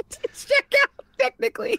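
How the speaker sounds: squeaky playful voice.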